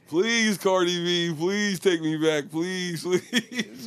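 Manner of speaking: slow, drawn-out begging, pleading over and over. Retelling how a man begged cardi b to take him back: imitating someone begging. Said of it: "he was begging, begging".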